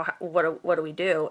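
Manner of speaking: normal talking voice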